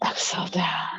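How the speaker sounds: whispered softly on the exhale.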